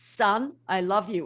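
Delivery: deep, slow, grave, measured delivery. Recalling the first voice ever heard, deliver it in a Charlton Heston deep voice. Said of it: "in this deep voice".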